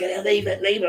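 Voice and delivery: very high-pitched, shrill shouting. Retelling how they shouted at Scrappy while training, retelling a shout. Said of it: "I'm shouting".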